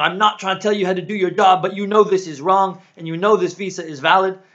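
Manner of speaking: confrontational shouting. Retelling a visa dispute, quoting a companion confronting an official, imitating John shouting. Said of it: "kind of shouting at him".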